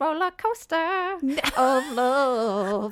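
very slow, drawn-out talking-parrot voice. Retelling phrases a pet parrot would say: imitating a parrot talking. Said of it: "and he would say".

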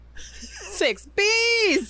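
comic squeaky bee voices.

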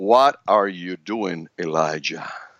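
small, calm, peaceful, very deep voice. Retelling elijah's story, giving god's question in a small, peaceful voice. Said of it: "he spoke in a small, peaceful voice".

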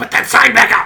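mock yelling. Speaker retells Ashley yelling at them during rally practice, retelling a yell. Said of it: "yelling at me".

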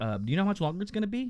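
put-on, very high, extra courteous, super polite tone. Retelling a drive-through wait, imitating own super polite voice. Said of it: "I was super polite".

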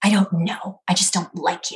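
snarling, rough and aggressive. Retelling the roommate's answer to why she dislikes the speaker: imitating a snarl. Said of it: "with a snarl".

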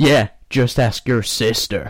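put-on American child voice. Voicing the second kid in a made-up exchange, in an american kid voice. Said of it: "I've gone American, I'm sticking with it".

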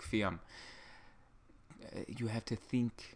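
weak, half-hearted put-on Hungarian accent, whispered. Quoting mom's advice on cooling down without air conditioning: failed hungarian accent attempt. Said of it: "She would tell me in her thick Hungarian accent".

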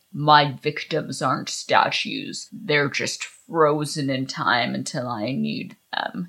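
low, spooky, sinister, ghoulish villain voice. Retelling a story, speaker voices the ghoulish villain confronting Aggie, ghoulish villain voice. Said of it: "That was a great impression".

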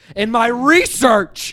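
put-on very loud, high emphatic burst. Imitating a film character's line about his research, with more oomph. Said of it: "saying this second one with more oomph".

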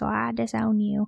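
put-on gentle, sweet little southern grandma voice. Retelling grandma's answer when asked about getting a tattoo: sweet little southern voice. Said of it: "she like her sweet little southern voice".

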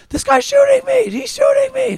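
loud high-pitched screaming. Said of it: "Robert screamed and was like".

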